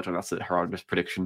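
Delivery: ordinary delivery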